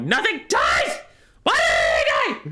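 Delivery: put-on frustrated, baffled cry, very high and loud. Retelling own reaction when a unit lost: retelling own frustrated outburst. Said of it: "I'm like".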